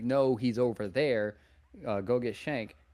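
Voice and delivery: ordinary delivery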